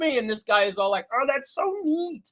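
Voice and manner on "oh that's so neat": extremely high, pitched-up frog puppet voice. Retelling a presenter's reaction to the prototypes: high as hell Kermit the Frog voice. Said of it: "he sounds like a high as hell Kermit the Frog".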